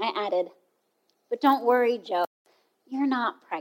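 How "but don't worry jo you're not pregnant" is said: soothing, reassuring voice. The speaker retells what they added at the end to jo: retelling reassuring words. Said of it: "just to reassure her".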